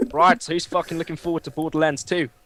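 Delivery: bad fake put-on Australian accent. Chatting with the others about games, in a bad australian accent. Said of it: "That was my shit Australian accent".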